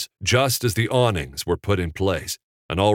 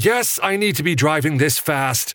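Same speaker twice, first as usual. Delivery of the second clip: loud, high-pitched shouting; 7 semitones higher than usual. Reading Evan answering Coop's nervous question while driving, shouting back. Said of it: "Evan shouted back".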